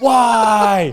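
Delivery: very high, very loud, long, drawn-out howl of pain. Retelling how an injured athlete screamed in pain: imitating someone screaming in pain. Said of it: "screaming worse than that, cussing".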